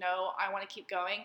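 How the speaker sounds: ordinary talk, nothing marked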